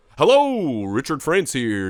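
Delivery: loud, swooping, announcing grandpa voice. Retelling a voicemail the grandpa would leave: imitating grandpa's voice. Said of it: "That's how my grandpa talked".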